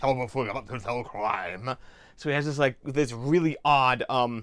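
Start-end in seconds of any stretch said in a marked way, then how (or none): 0.0-1.8 gruff, lower voice out the side of the mouth. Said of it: "way of speaking out the side of his mouth".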